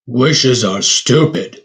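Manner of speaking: growled voice. Reading a story aloud, the Beast answers Belle about the Yule log in a growling Beast voice. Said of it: "growled the beast".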